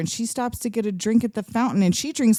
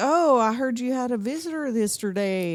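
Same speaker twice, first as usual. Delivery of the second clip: put-on Southern accent; 2 semitones higher, 3 dB quieter than usual. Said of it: "He comes in with an accent, like a southern accent".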